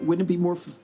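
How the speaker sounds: high-pitched, eager, pleading superhero voice. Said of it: "and he's like".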